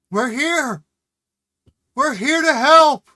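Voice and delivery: shrill, very high, very loud yelling. In a tabletop game, a character answers a tinny voice over a horn, yelling.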